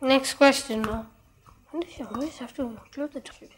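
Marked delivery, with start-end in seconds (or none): 1.7-3.5 grumbled under the breath, very soft. Speaking to oneself mid-conversation after a question, muttering under breath. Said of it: "What are you muttering under your breath?".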